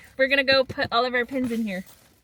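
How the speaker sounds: ordinary delivery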